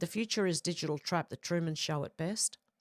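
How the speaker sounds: ordinary talk, nothing marked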